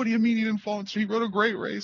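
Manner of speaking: high, fast, indignant tone.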